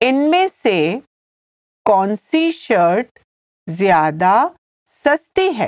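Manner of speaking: deliberate, slow, halting, word-by-word pace. Teaching a hindi sentence and repeating it for the learner, said slowly. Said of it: "I'll say it again slowly".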